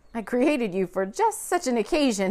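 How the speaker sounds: laughing warmly while speaking. A narrator reads a man speaking to the ball he created, laughing warmly. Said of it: "he laughed warmly".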